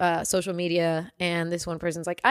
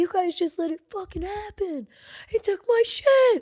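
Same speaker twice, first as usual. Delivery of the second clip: put-on shrieking scream, pitched way up; 12 semitones higher than usual. Recounting a man who got robbed, the speaker imitates him screaming. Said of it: "He was like screaming".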